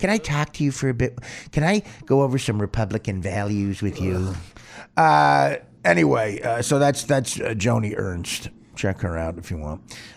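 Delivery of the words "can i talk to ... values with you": nagging, annoying, pestering tone. Imitating a politician pestering people at the airport: imitating Joni Ernst as annoying. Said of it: "She's like an annoying airport bitch".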